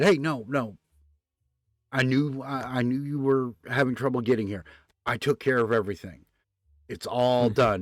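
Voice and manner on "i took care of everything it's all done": ordinary talk, nothing marked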